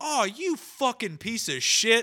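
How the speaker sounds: sudden blurted outburst, very high, loud, shrill. Watching a movie beside mom, the speaker reenacts a retold blurted outburst. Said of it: "blurted it out".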